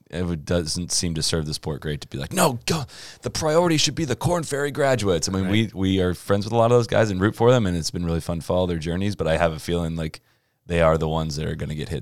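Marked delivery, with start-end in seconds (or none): 2.3-5.3 very high, outraged, put-on English accent. Discussing Korn Ferry graduates and the PGA Tour, the speaker slips into an outraged English accent. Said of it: "an English outrage accent".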